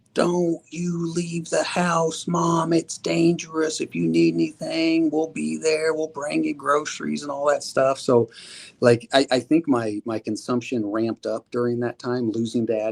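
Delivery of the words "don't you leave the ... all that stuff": put-on, high-pitched screaming yell. Recalling what they said to their mother, retelling screaming at her. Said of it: "I'm screaming at her".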